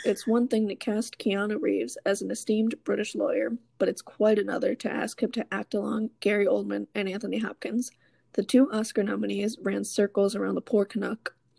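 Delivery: ordinary delivery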